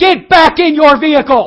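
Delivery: very loud, very high, angry, drawn-out yell. Retelling how a man on a tow motor yelled: imitating a man yelling. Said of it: "the man yells".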